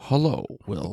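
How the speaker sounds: drawn-out, very soft, slow, low, hushed delivery. Showing the other speaker how the character says the line, slower delivery. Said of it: "he says it slower".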